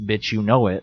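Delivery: ordinary talk, nothing marked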